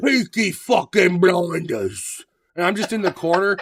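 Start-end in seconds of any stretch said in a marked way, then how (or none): 0.0-2.2 heavy put-on British accent, laid on thick. Imagining being the fat Peaky Blinders brother, in a thick English accent. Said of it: "speak with a fucking like a British or an English accent".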